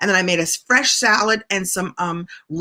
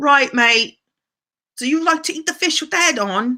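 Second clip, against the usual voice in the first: really bad put-on English accent, pitched up; 5 semitones higher than usual. Greeting someone from England, the speaker puts on a really bad English accent. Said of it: "I'm going to do a really bad English accent".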